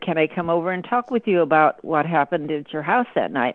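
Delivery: ordinary talk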